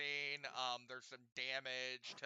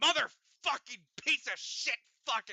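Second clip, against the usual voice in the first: shrill, very high, very loud, enraged furious scream; 9 semitones higher, 9 dB louder than usual. Narrating a game, voicing an agitated character at the dock, angry screaming. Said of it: "he's kind of screaming".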